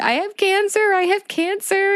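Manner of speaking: mock frantic screaming, pitched very high. Retelling falling to the ground after hearing the news: retelling own screaming. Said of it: "just screaming, like".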